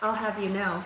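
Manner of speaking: ordinary delivery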